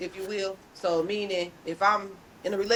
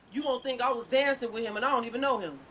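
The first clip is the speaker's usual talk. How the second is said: usual speaking voice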